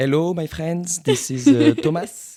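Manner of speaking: genuine French accent, loud and high. Greeting listeners after being asked to put on his real accent: french accent. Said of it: "you can put on your real accent".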